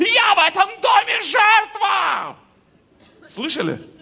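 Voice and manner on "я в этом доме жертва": shrill, very high, very slow, dragged-out yell. Speaker acts out someone in a marriage yelling at home: retelling a yell. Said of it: "кто-то орал?".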